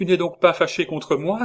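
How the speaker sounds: sudden, heartfelt outcry, high and loud. A narrator reads a wife pressing her husband to her heart: crying out. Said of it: "s'écria-t-elle en le pressant contre son cœur".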